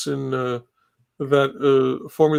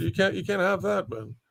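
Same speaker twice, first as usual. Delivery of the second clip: plain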